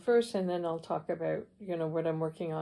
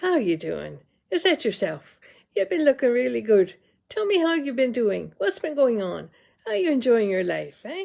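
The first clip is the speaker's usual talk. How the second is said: very loud, outgoing, chatty, sing-song, gregarious tone; 5 semitones higher, 9 dB louder than usual. Demonstrating two intro styles, starting with her husband's greeting: imitating her husband. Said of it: "So I'm going to imitate him".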